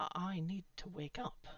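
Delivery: ordinary delivery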